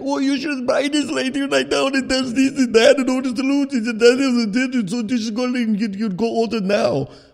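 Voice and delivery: put-on thick Indian accent. Retelling a guy trying to sell them a product, imitating a thick indian accent. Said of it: "he has such a thick foreign accent".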